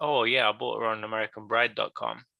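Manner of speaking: dry, flat deadpan delivery. Telling how they answer couples who ask how they met, retelling a deadpan line. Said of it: "like real like deadpan".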